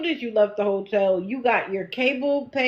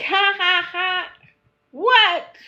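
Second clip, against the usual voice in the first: put-on very slow, drawn-out high giggling; 8 semitones higher, 3 dB louder than usual. Retelling a woman giggling while showing her feet: imitating her giggling. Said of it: "she's there giggling".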